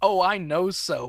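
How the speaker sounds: acted-out, all-knowing, self-assured, in on the joke. Recapping an episode, acting out a character answering toward the camera, mock-knowing. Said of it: "with a knowing wink and goes".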